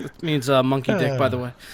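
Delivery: ordinary delivery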